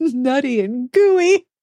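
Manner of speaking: high, helpless laughing speech, words breaking up. Repeating a funny phrase from a book review, laughing uncontrollably while talking. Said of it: "I just lose control of myself, and now is that time".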